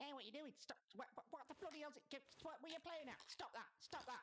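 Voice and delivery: tiny, squeaky, very high fly voice. Game master voices a fly speaking in a player's ear, in a tiny fly voice. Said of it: "you notice a tiny voice in your ear".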